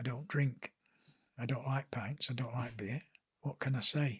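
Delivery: low, soft, quiet, anxious worried murmur. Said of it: "I'm thinking".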